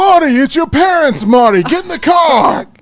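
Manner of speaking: bad, shrill, high, loud, slow, drawn-out yelling. Showing the others a bad Christopher Lloyd Doc Brown impression. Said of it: "I do the worst Christopher Lloyd Doc Brown impression".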